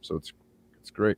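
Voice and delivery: unenthusiastic, flat, not excited. Explaining that chemicals leached into the groundwater and bloodstream: not sounding excited. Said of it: "You do not sound excited at all".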